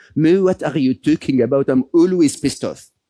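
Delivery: strong, put-on French accent. Retelling a friend's laughing reply to a question: Matthieu Ricard's very French accent. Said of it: "in his very French accent".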